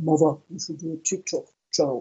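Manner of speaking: deep, low, broken voice. Retelling what her son kept saying, imitating his deep, broken voice. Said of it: "he's got a very deep, broken voice".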